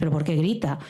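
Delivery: normal talking voice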